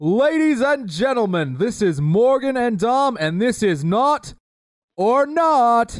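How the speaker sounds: very high, showy game show announcer voice. Asked to introduce next week's show, in a game show announcer voice. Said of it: "give us in your greatest game show announcer voice".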